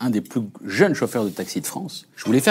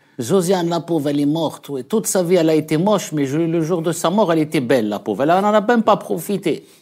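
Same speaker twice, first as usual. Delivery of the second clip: put-on old grandmother voice, higher; 5 semitones higher than usual. Performing an early stand-up sketch as a grandmother: playing a grandmother character. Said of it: "une grand-mère qui parlait de sa belle-mère qui avait une petite voix".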